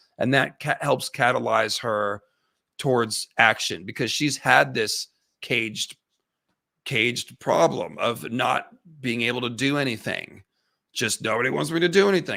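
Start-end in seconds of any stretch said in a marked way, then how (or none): 11.2-12.4 put-on sarcastic angsty teenager voice, higher pitch. Describing a scene's turning point, imitating sarcastic Rhaenyra. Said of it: "she's getting sarcastic about it".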